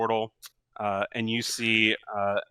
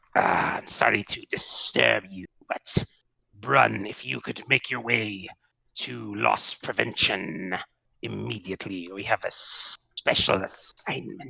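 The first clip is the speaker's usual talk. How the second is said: exaggerated slithery, creaky, rough voice. Over a crystal PA system, security chief Slorn summons Brun: exaggerated slithery Slorn voice. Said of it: "exaggerated slithery voice of Slorn".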